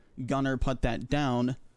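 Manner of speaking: ordinary talk, nothing marked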